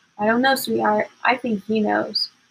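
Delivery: ordinary delivery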